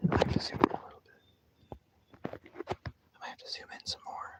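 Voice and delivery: hushed, very quiet, barely voiced whisper. Zooming in to read tiny lettering while others watch, whispering. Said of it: "I don't know why I'm whispering".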